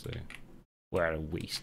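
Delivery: put-on New York accent. Retelling what he would have said about the video, in a New York voice. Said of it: "in a New York voice".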